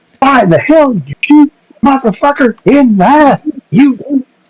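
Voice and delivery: yelling in a character voice. Yelling at an enemy while swinging at it: yelling in character. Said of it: "I'm just yelling and swinging".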